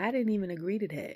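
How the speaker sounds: normal talking voice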